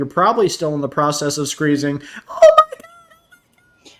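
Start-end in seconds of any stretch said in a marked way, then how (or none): 2.3-3.9 high, loud panicked shriek. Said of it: "You're just going through panic mode".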